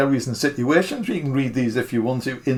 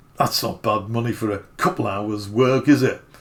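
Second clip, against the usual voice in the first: put-on grumbling voice, low; 4 semitones lower than usual. Retelling what a man paying for a gig said, imitating a grumbly voice. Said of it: "that's my best grumbly voice".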